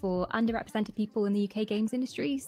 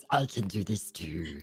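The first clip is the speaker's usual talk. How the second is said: put-on sinister evil voice, dropped way low; 13 semitones lower than usual. Offering voices to the group, the speaker shows off a creepy voice. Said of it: "if you need creepy voices".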